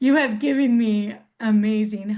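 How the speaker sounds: crying through the words. Thanking the doctor for everything done, crying while speaking. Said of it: "I'm crying right now".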